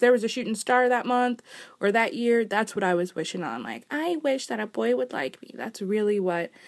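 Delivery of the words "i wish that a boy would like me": put-on high little babyish voice. Recalling a wish from when she was younger, baby voice. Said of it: "I don't know why I'm doing that baby voice".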